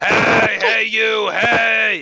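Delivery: shrill, very high, loud, drawn-out screaming. Narrator voicing a drink in a glass that screams at the player, screaming. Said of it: "screaming at you".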